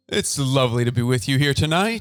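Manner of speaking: six o'clock radio newsreader delivery. Teasing another speaker who sounds like an announcer, in a six o'clock news anchor voice. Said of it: "the six o'clock news".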